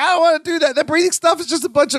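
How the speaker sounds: high, fast, panicked complaining tone.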